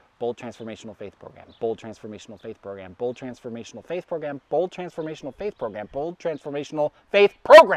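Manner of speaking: very fast, rapid-fire, rattled-off repetition. Taking a dare to say a phrase five times fast, very fast. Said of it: "just say it five times fast".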